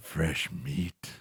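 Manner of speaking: low, throaty, guttural monster growl. Describing a humanoid creature turning to look at you, voicing it: deep guttural voice. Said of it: "Just just a deep guttural voice".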